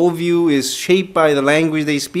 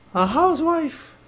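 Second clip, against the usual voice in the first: mock-feminine, very high put-on voice; 11 semitones higher, 6 dB quieter than usual. Joking about becoming a housewife in Japanese, put-on feminine voice. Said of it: "I just wanted to sound feminine".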